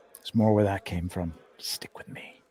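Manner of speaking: soft, low whispering. Character feeding Henry carrots and speaking into his ear, whispering. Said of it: "just whisper in his ear".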